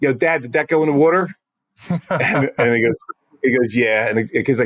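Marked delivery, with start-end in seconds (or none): 0.0-1.3 put-on child voice with South Jersey accent. Retelling what a kid asked his dad, in a south jersey accent. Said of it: "I'm going to put my South Jersey accent on".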